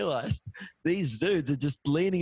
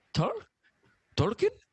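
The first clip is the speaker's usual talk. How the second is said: terrible put-on Belgian accent, pitched up; 8 semitones higher than usual. Imitating a Belgian guy outside the venue, guessing a name: terrible Belgian accent. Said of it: "this is a terrible accent".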